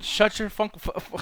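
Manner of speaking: giggling through it, breathy, broken, stumbling. Trying to say a crude line without laughing: laughing while talking. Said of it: "you're laughing right now?".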